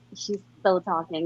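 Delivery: calm, deep put-on voice. Retelling an Alexa commercial: calm deep Michael B. Jordan voice. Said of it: "this handsome guy just like".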